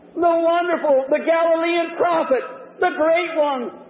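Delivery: hollered loudly. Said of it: "Some of them hollered".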